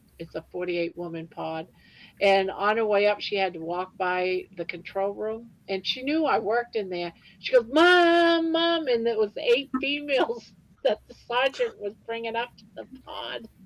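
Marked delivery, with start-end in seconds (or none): 7.7-8.9 very high, loud, long, drawn-out shouted call. Speaker retells a woman calling to her past the control room, retelling a yell for mom. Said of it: "and she's yelling".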